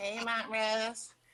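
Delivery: high, slow, drawn-out mocking voice. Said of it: "always changes in your voice depending on who you say it to".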